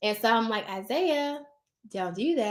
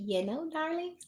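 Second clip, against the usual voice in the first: sugary, soft, sweet put-on nice voice; 5 semitones higher, 8 dB quieter than usual. Acting out a parent who has to address their kids nicely in public, in a put-on nice voice. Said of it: "you better use your nice voice".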